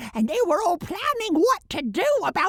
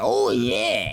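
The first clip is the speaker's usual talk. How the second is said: low, guttural voice. Replying after being thanked, [name]'s low guttural voice. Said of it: "please stop talking like that".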